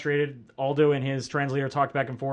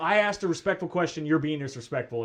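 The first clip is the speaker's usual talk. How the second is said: ordinary delivery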